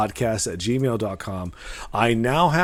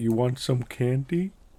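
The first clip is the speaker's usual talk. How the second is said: creepy put-on alien voice, quieter; 4 dB quieter than usual. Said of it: "it's real creepy the way it's said".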